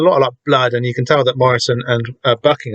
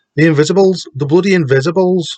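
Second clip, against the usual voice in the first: terrible, put-on Wigan accent; 4 semitones higher than usual. Retelling a character's reply while attempting a Wigan accent, as Mister Six in a bad Wigan accent. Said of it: "What's a Wigan accent?".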